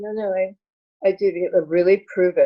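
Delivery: ordinary delivery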